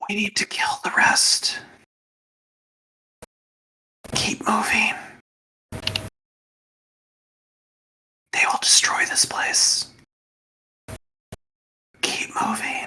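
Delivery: very quiet, hushed, urgent whisper. Voicing a hidden voice that speaks to a player: whispering voice. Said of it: "a voice that whispers to you amongst the air".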